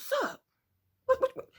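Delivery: hushed, breathy whisper. Retelling a phone call where the caller whispered, so she whispered back: retelling her own whisper. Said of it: "so I'm whispering too".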